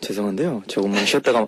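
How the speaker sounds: corny, cheesy learner-like tone. Showing how a learner sounded asking for a rest: imitating Kevin's cheesy tone. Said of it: "how Kevin sounded".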